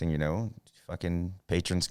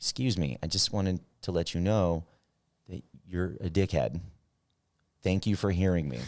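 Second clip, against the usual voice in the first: overly polite fake courtesy over rudeness. Showing how rude things get said very politely: mock polite rude remark. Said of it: "But I say them very politely".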